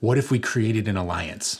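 mock whispering. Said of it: "he's kinda whispering".

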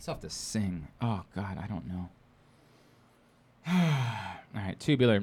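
sounding a bit dejected. Struggling through a meal and talking to another speaker, sounding a bit dejected. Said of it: "You sound a bit dejected".

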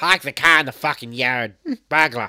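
very loud, put-on Boston accent. After admitting they are not good at Boston accents: put-on Boston accent. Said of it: "I'm not good at Boston accents".

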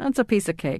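ordinary delivery

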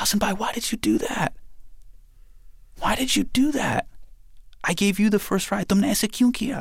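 very high, tearful, pleading, acted-out crying voice. Retelling a younger sister running over after a crash, imitating her crying. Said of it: "She's running over and she's just crying".

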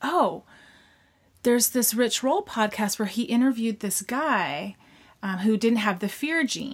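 ordinary talk

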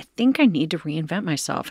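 ordinary talk

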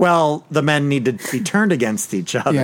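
ordinary delivery

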